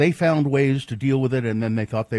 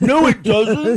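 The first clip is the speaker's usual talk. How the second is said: put-on Liverpool voice, higher and louder; 11 semitones higher, 8 dB louder than usual. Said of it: "That's your [name] impression?".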